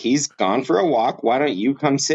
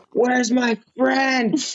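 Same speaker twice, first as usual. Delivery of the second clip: mock whining toddler tantrum, higher pitched; 10 semitones higher than usual. Retelling a man throwing himself down like a toddler: imitating a whining toddler-like man. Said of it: "kind of being a toddler".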